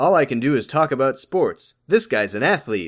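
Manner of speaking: half put-on sportscaster broadcast voice. Quoting a movie character's line: imitating a sportscaster voice. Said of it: "a sportscaster voice kind of pretending to".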